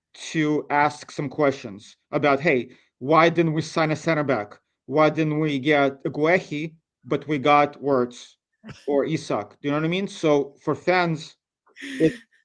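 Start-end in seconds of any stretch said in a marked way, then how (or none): none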